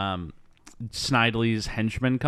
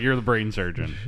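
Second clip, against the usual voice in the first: ordinary talk, nothing marked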